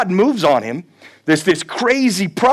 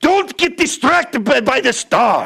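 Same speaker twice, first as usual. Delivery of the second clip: put-on drawn-out hazy Irish accent; 5 semitones higher than usual. Retelling a pastor's warning in his accent: imitating Alistair Begg's accent. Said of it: "he says it in his best, I don't know if he's Irish".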